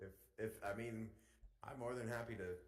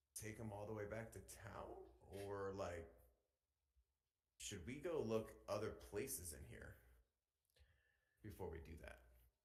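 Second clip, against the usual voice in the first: secretive, hushed voice; 3 dB quieter than usual. Speaking in character to two companions about a plan: half-whispering. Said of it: "whispering to both of you guys".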